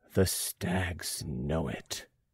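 low, hushed, dread-filled, terrible voice. Narrator reads a woman's words as she looks at a portrait, low, terrible voice. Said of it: "says in a low, terrible voice".

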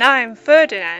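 growling. Reading a story, the last tiny beastie introduces itself to Daisy, growled. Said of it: "growled the last".

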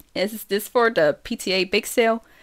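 ordinary delivery

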